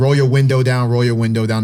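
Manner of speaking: usual speaking voice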